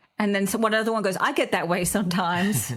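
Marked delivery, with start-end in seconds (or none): 1.2-2.8 casual, unemotional, offhand, matter-of-fact tone. Retelling characters' conversation in a film scene: imitating a matter-of-fact delivery. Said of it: "they're saying it so matter-of-factly".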